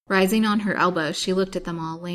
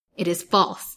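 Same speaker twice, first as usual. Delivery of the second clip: contemptuous, scornful delivery. Narrator reads Miss Lawrence answering the man who muttered, scornful. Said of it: "she said scornfully".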